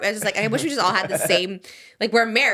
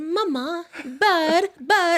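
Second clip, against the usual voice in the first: put-on very British toddler voice, much higher, slower; 9 semitones higher than usual. Imitating a little girl's words from the last video, very british toddler voice. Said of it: "very British".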